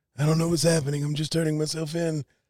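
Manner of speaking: very high-pitched Italian mobster voice. Slipping into a voice a listener then calls Italian: Don Corleone voice. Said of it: "you turned Italian?".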